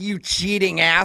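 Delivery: acted-out furious yell, mock anger. Recounting a friend's phone call to a man, acting out her line: retelling an angry yell. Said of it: "called him up and yelled at him".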